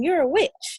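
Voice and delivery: high screamed outburst. Retelling what a man in the store kept screaming: imitating a man screaming. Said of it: "And he used to scream".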